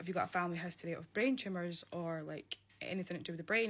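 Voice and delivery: plain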